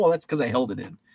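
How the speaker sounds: normal talking voice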